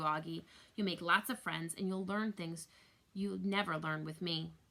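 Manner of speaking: ordinary delivery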